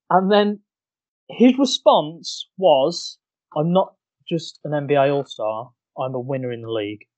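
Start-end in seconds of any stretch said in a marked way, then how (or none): 3.5-7.0 mock bone-dry deadpan, quiet and utterly flat. Retell the response to your introduction on a live NBA TV broadcast, imitating a deadpan Kyrie Irving. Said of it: "As deadpan as you like".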